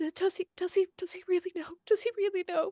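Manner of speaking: very high, frantic, desperate pleading tone. Speaker retelling a story about Madam Mina, imitating Penelope pleading. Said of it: "And Pen- Penelope's like".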